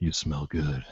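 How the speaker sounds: low, very soft murmur. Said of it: "Hayden say softly".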